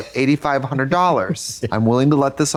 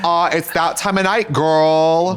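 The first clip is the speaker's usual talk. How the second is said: put-on campy, drawn-out, girlish voice; 3 semitones higher than usual.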